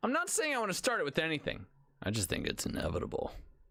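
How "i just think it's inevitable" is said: low rasping villain voice. Saying something is unavoidable, sounding like Thanos. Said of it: "you sounded like Thanos".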